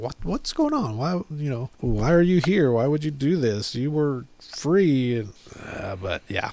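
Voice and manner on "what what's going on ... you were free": usual speaking voice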